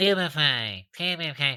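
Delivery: put-on nasal voice with nose pinched. Mocking how the audiobook narrator reads Neville's lines, Jim Dale's pinched-nose Neville. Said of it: "holding his nose the entire time".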